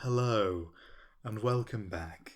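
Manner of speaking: soft, hushed, breathy asmr-style voice. Welcoming listeners back after a break: soft ASMR voice. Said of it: "I've gone A S M R all of a sudden".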